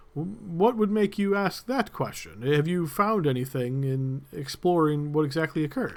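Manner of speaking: slightly shocked, taken aback, caught off guard. A narrator voices a man replying to your question, a little shocked. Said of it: "maybe a little shocked".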